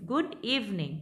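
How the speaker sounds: pitch climbs then drops on good evening. Teaching English intonation: rise then fall on good evening. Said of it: "पहले rise हो रही है फिर आपकी rise फॉल".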